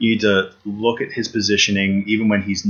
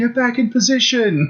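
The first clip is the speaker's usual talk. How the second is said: high mock screaming yell. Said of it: "I would just scream at the television".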